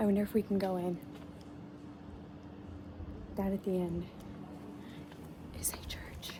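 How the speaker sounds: hushed whisper. Telling the guys about a giant church at the end, whispering. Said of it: "I don't know why I'm whispering".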